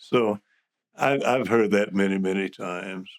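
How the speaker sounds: with a chuckle. Speaker admitting to a former opponent that they were right about a vote, chuckling.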